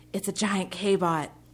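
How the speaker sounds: loud, slow stage whisper. A woman peers around an alley corner and warns her companion; loud whisper. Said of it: "Prin whispered loudly".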